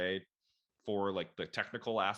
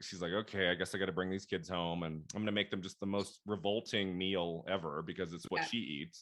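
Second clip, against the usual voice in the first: usual speaking voice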